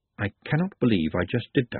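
usual speaking voice

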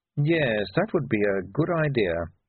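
ordinary delivery, nothing marked

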